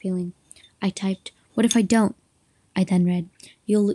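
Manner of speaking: ordinary delivery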